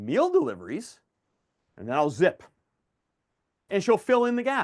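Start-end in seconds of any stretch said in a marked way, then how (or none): 0.0-1.0 pitch rising upward on meal deliveries. Repeating a customer's answer back to her: rising question tone on deliveries. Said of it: "with an upward inflection and a question mark".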